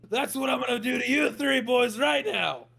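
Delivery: shrill, very high, gloating frog king voice. A storyteller voices the bullywog king after a sword fight, giant bullywog king voice. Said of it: "And you see a giant bullywog, almost as if it's a boulder with legs. And it's got a tiny little crown on top of its head. / And you see a giant bullywog, almost as if it's a boulder with legs. And it'".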